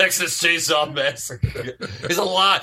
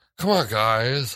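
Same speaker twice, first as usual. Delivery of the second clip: put-on, mock airy voice; 6 semitones lower than usual. Discussing a comedy, imitating the boyfriend character, in an airy voice. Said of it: "like kind of airy voice or he's like".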